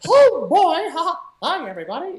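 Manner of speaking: very high cartoon voice, pitch pushed up and swooping. Recalling working on impressions, breaking into a Mickey Mouse voice. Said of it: "working on Mickey Mouse impressions".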